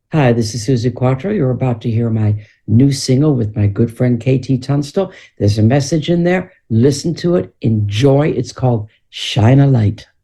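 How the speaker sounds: on-air radio announcer delivery. Asked by the host to introduce your latest single, BBC Radio 2 DJ voice. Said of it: "I'll put my best B B C Radio two D J voice on".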